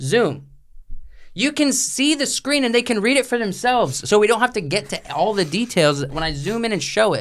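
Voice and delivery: exasperated, over-explaining tone.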